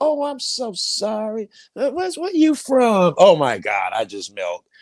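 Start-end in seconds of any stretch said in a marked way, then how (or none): 0.0-3.1 soft put-on Southern accent, slowly drawn out. Describing how a person apologizes to the speaker; imitating a Southern accent. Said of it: "You get that southern".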